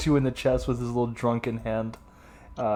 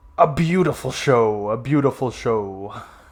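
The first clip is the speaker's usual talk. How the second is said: big, loud, booming, resounding delivery; 5 dB louder than usual. Playing a voice heard from upstairs, booming voice. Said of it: "you hear from upstairs a booming voice".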